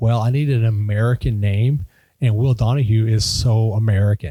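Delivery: normal talking voice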